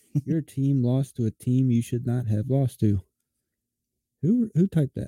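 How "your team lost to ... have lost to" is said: flat, mechanical, robot-like reading. Speaker reads a typed prompt into the mic, reading like a robot. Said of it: "Why are you reading it like a robot?".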